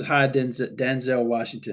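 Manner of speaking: ordinary talk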